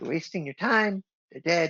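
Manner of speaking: tiny, chirping little voice. Narrating a voice heard from behind the player, small chirpy voice. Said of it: "a small, like, chirpy voice".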